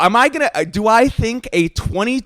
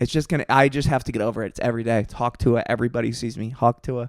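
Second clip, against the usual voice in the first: low, soft, weary voice. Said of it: "the way she said Hawk Tuah".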